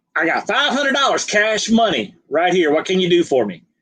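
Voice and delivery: put-on heavy, thick, swooping Southern accent, laid on. Retelling what William said to a salesperson, imitating William's thick Southern accent. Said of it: "very thick Southern accent".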